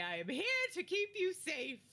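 very dramatic, showy, grand, swooping theatrical delivery. Bursting through a door as a bodyguard in a role-play: very dramatic delivery. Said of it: "open it very dramatically and say".

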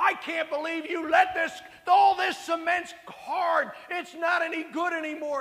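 high, loud, furious angry screaming. Retelling how a man across the street yelled at him, imitating someone screaming. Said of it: "And he's screaming at me and yelling at me".

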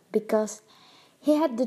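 plain reading voice

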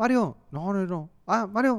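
high-pitched shouting, calling out loudly. Describing how players shout to find each other in a game: imitating players shouting. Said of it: "los jugadores se la pasan gritando".

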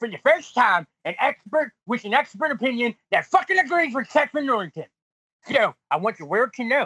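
heated, worked-up and vehement. On a show, speaking to the other person while they talk: getting heated. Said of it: "I'm sorry I'm getting heated".

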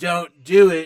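put-on American accent. Retelling a movie scene where he holds a gun: Daniel Craig's American accent. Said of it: "in his best American accent".

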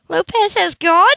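sudden excitement, high-pitched and loud. She asks him, excited. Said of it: "She asked excitedly".

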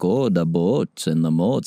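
put-on northern Midwest Minnesota accent. Asked about the Nebraska accent, mimicking people further north: Minnesota-style accent. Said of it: "if you go a little north, it's like".

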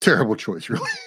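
ordinary talk, nothing marked

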